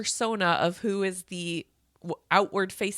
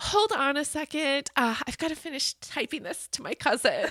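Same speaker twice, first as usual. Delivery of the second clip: high, vapid, empty-headed airhead voice, distracted chatter; 7 semitones higher than usual. Retelling a book scene, acting out a character's pretend persona: imitating a vapid persona. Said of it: "this vapid person she becomes".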